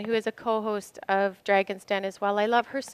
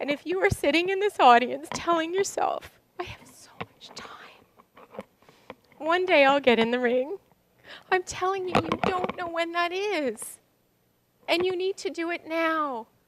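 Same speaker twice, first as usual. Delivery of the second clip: crying, tearful pleading words, pitched up; 7 semitones higher than usual. A speaker whose son died addresses the audience, crying while speaking. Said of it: "I'm crying because I need you to know".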